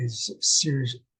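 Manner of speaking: normal talking voice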